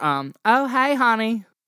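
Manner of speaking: slow Southern mother voice. Playing the listener's mother greeting them as they walk in, in Patty Mayonnaise's Southern voice. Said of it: "She was very Southern".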